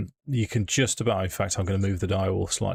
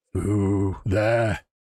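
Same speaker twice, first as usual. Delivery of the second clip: put-on gruff, tough-sounding female voice. Players hear a voice calling from inside: butch female voice. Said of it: "a butch female voice from inside saying".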